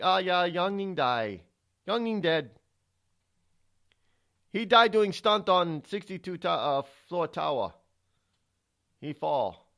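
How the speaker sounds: very bad fake Chinese accent, broken English. Telling a story, speaker voices the people in a very bad Chinese accent. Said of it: "it's my very bad Chinese accent".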